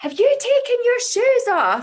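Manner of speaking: very high, loud shouting. Retelling a moment when the son ran upstairs: retelling a shout at his son. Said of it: "I shouted to him".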